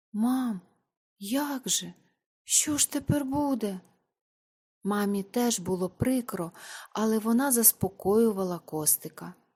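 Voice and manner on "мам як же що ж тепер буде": quavering, trembling voice, lost, bewildered and dismayed. A boy asks his mother after hearing his order is delayed, in a trembling voice. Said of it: "тремтячим голосом спитав".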